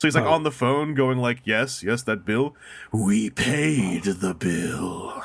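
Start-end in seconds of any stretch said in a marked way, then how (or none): 1.4-5.2 very slow, mesmerizing, hypnotic put-on voice. Retelling a movie character on the phone with company representatives, put-on hypnotizing voice. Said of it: "puts on this voice every now and then".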